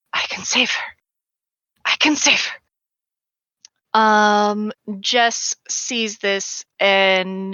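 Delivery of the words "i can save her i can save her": hushed, repeated whisper under the breath. Voicing a fighter throwing punches while muttering to herself: whispering. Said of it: "just hear her whispering".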